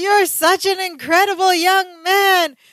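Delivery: full-on, high-pitched screaming delivery. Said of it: "He's screaming".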